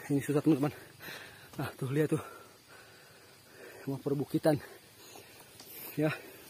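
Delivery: out of breath. A traveler walking a hard road with viewers, out of breath and panting. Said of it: "maaf ngos-ngosan ini".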